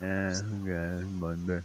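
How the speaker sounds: mock barely audible flat unenthused murmur, "okay" drawn out. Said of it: "She's like".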